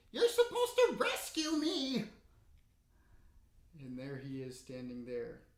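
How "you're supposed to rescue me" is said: piercing kobold screech, very high and loud. Narrating as the listeners run from the room, a kobold cries out: high screechy kobold voice. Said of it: "a kobold's high, screechy voice".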